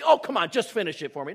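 mock insistent parent voice. Acting out a mother urging her full child to eat: imitating his mother. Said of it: "this is definitely my mother's number one".

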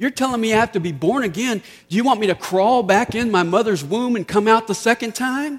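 lightly sarcastic tone. Acting out Nicodemus answering Jesus: imitating Nicodemus, sarcastic. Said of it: "Maybe a little sarcasm there".

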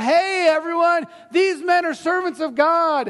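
mock yelling. Retelling a woman calling out to everyone about these men, retelling a yell. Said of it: "She's yelling out".

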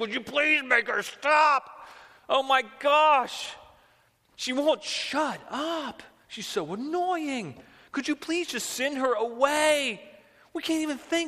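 very high-pitched, loud, fed-up, exasperated begging. Retelling how the disciples begged Jesus about the persistent woman, imitating the disciples' begging. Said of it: "and they begged him".

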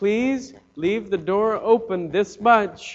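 put-on slow, sweet pleading little girl voice. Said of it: "in her sweetest voice that she has possible".

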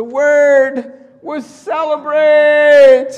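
very loud, high, choked-up sobbing cry. Telling a story, the speaker gives the crying old abbot's reply: retelling with a choking voice. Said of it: "With a choking voice".

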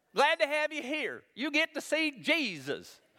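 put-on high-pitched voice with a Southern accent. Imagining arriving in heaven, voice God welcoming people in a high Southern voice. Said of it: "God's got a high Southern voice".

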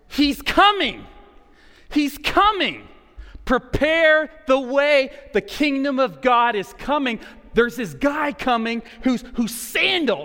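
put-on, high, loud screaming at the top of the lungs. Acting out a guy in the Jordan River, retelling a scream. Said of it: "screaming at the top of his lungs".

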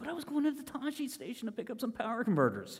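soft, swooping, put-upon protesting tone. Acting out a reply to an uncle's order to do a chore, in a Luke Skywalker voice. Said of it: "I picture him with the Luke Skywalker voice".

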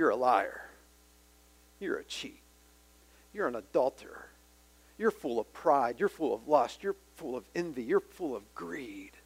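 hushed, accusing half-whisper. Acting out Satan accusing someone in their ear: imitating Satan half-whispering. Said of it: "he's whispering".

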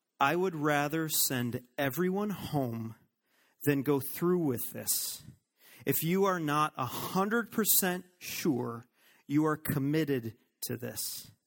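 put-on stern, no-nonsense, grave, utterly serious tone. Retelling what was said to couples before the wedding: retelling own words in a very serious tone. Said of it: "the most serious tone you'd ever hear me use".

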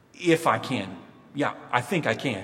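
somewhat sarcastic delivery. Retelling how Jesus answers the father's doubt: imitating a sarcastic reply. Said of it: "somewhat sarcastically".

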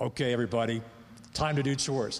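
put-on scary, stern, commanding military-dad voice. Retelling calling the kids to do chores, mock-stern commanding voice. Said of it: "I'd bring out this voice like".

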